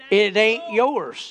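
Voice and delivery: put-on folksy country-accent delivery. Retelling what a woman said to the speaker, in a country accent. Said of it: "in a country accent".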